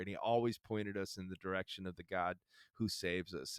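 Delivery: ordinary delivery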